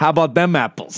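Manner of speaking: slightly cocky Boston voice. Naming Matt Damon in Good Will Hunting as a favourite voice, in a Matt Damon Boston accent. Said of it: "just the Boston accent, just a little cocky".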